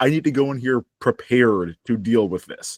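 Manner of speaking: ordinary talk, nothing marked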